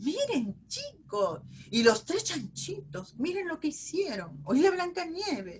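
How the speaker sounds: put-on very high, engaging, sing-song children's storyteller voice. Demonstrating how to narrate a story to children: engaging storytelling voice. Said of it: "nuestra voz al narrar tiene que ser una voz pues que sea este, atractiva".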